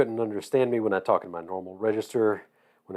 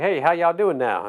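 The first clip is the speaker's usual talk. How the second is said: put-on Southern accent with raised pitch; 7 semitones higher than usual. Retelling how they greeted people after coming back from georgia, in a southern accent. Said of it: "you talk like a Southerner".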